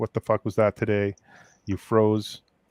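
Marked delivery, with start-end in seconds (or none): none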